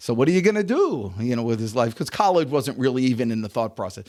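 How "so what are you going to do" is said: put-on French accent with Yiddish-inflected lilt.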